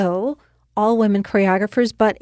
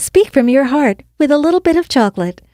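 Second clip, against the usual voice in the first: loud, high-pitched cartoon chocolate candy mascot voice; 5 semitones higher, 6 dB louder than usual. Showing an interviewer voiceover tones, M&M's character voice. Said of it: "it's always fun to do like M and M's".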